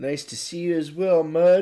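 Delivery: mid-yawn. A host greeting viewers by name before the show, yawning. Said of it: "Sorry I'm yawning".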